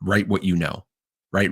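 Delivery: ordinary delivery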